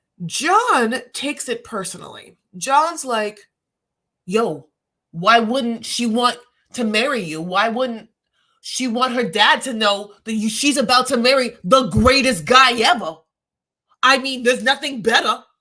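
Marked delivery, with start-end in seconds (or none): 4.3-15.4 put-on strong New York accent. Speaker retells a man standing up for his friend: new york accent. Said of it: "It's very New York".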